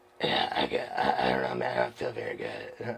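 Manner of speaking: voiceless, barely-there lost voice. Retelling what a sick runner said at the aid station: imitating someone who lost his voice. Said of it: "he talked like that".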